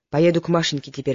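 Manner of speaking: usual speaking voice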